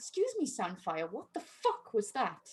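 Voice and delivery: very soft, hushed voice through clenched teeth. Playing a character who wheels sandfire away, speaking through gritted teeth. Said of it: "through like gritted teeth".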